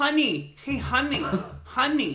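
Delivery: put-on woman's voice, high, calling-out yell. Telling a story about a woman calling across the room to her partner, imitating a woman yelling. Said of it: "she was like yelling".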